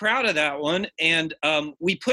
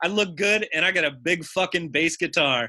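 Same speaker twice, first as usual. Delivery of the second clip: ordinary talk, nothing marked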